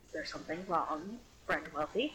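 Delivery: low, secretive aside. Out of earshot, speaking to a friend: lowered voice. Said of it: "lowered voice".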